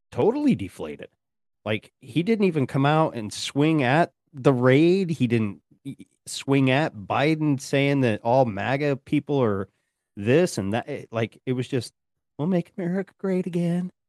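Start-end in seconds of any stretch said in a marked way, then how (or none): 12.3-13.8 small, soft, pitched-up little voice. Retelling a speech, imitating Trump's soft little voice. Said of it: "in his lo-, soft little voice".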